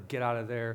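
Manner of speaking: normal talking voice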